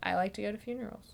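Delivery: put-on flat delivery. Describing a scene, the speaker retells a character's line in a deadpan. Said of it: "And then he just deadpans".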